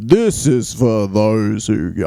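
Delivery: mock vocal fry, creaky put-on delivery. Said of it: "Vocal fry".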